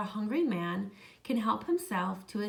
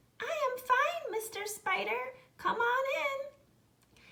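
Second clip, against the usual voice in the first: tiny, very high, slow little voice. Reading a folktale, a voice answers Mister Spider from inside the house, small and high. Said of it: "came a small, high voice".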